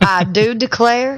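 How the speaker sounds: Southern US accent, drawn out. Saying a line in a Southern accent because another speaker asked: Southern accent on request. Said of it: "Can you say that for me?".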